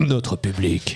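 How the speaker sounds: low, very slow deep voice.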